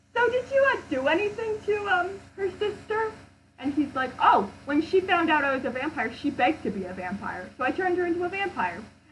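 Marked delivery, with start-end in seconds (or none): 0.1-3.1 mock meek, timid, very high voice. Retelling a story, speaker voices the plague doctor asking: imitating a timid question. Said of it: "the plague doctor very timidly goes".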